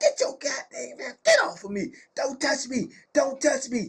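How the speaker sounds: angry, high-pitched furious yelling. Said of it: "She like".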